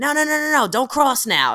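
very high-pitched yelling. Retelling how people yell at a stranger on the street: imitating someone yelling. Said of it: "I've heard people yell at".

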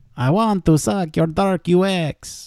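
put-on vampire voice. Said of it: "my Dracula voice".

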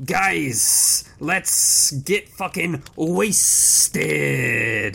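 hissing, rasping snake-man voice, exclaiming. Reading the story, the narrator voices the rejoicing snake men exclaiming in a snake voice. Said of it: "exclaimed through snake voice".

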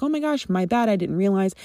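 normal talking voice

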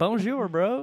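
French in a Southern accent, very high pitched. Teasing someone who lists fluent French on their resume: southern-accented French. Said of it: "With like a that southern accent".

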